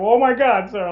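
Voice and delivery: mock frozen-up frightened panic, high-pitched. Retelling being screamed at after getting pulled over, acting out own past panic. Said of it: "I was totally like panicked and frozen up".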